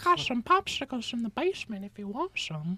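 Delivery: put-on very high-pitched, creepy old-man voice. Speaker describes someone who resembles a cartoon character: Herbert from Family Guy voice. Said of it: "the like old creepy guy on Family Guy".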